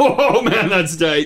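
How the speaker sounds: put-on very slow, high old-timer voice, dated slang. Trying out the slang word tight in a line: acting out old-fashioned slang. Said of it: "you sounded so old there".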